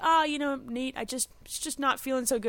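teary voice, holding back sobs. Retelling lying in bed with her son in tears, acting out tearful, not sobbing. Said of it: "tears running down my face, but I'm not sobbing".

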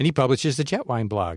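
ordinary talk

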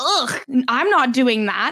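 put-on dismissive tone. Retelling what Michaela said about leaving a message: imitating Michaela. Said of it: "she's like".

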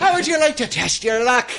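heavy, thick Irish brogue, pitched very high. Greeting someone at Chang's during a made-up bit, in an Irish accent. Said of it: "Chang's got taken over by the Irish mob".

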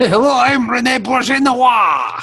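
put-on cheesy French accent.

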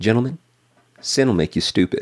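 put-on speaking in a Texan accent. Quoting a seminary Bible teacher addressing his class, in a Texas accent. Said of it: "in his Texas accent".

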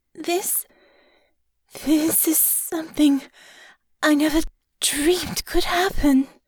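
trembling, unsteady voice. Honor, caressed by Natasha, speaks with her voice shaky with desire. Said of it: "her voice shaky with desire".

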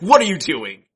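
exasperated, angry, high, very loud acted bellow. Retelling how a host yells at someone on Comedy Bang Bang: imitating Scott Aukerman yelling angrily. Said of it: "yells at them. Like, like angrily. He's like".

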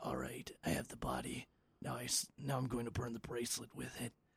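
sarcastic delivery with swooping pitch. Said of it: "that delivery then almost adds to s-, part of the sarcasm".

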